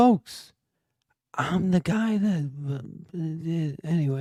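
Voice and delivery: drawn-out delivery with the ending mumbled. Asked by another speaker to do a quick impression ending with a mumble: Joe Biden impression with mumble. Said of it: "do a quick Biden impression, end with a mumble".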